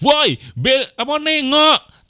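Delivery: high, slow, drawn-out yell.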